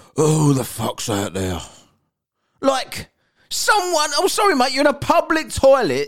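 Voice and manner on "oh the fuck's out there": put-on muttering to himself, mumbled. Recounting what a man in a public toilet said to himself, imitating someone muttering. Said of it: "mumbled to himself".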